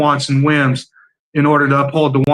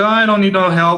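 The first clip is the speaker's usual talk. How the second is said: mock cool, calm, even-tempered, unbothered tone; 5 semitones higher than usual. Retelling a man's reply to an office worker offering help, imitating a calm reply.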